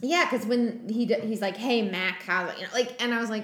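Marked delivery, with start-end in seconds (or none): 1.6-2.5 put-on old-timey New York accent. Retelling how a character greets a human in the pawn shop: Deimos's old-timey New York voice. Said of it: "in old-timey New York".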